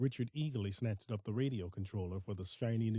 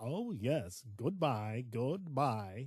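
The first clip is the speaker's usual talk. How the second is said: slow, scornful, mocking words through laughter; 2 semitones higher than usual. A man answers a goodbye, laughing mockingly. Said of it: "Richard laughed mockingly".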